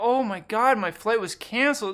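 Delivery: genuinely upset, distressed voice. Contrasting voice with sign language for showing you're upset, upset voice. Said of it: "if it really upsets you, in your voice, you'd be like".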